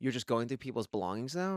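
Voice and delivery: plain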